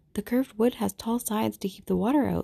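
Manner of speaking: usual speaking voice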